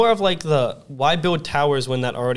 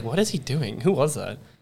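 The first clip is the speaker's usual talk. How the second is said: ordinary delivery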